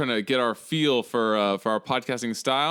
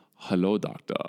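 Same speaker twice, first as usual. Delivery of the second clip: slight, affected put-on German accent, lower pitch; 6 semitones lower, 3 dB quieter than usual. Retelling how a man greets the doctor, slight German accent. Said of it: "He like affects this like slight German accent".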